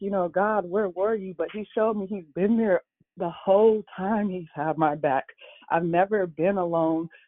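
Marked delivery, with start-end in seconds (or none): 0.3-1.3 weeping, tearful, pleading cry. Retelling a past prayer during a revelation: imitating own past crying. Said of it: "I was crying like".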